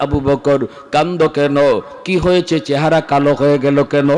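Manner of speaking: ordinary talk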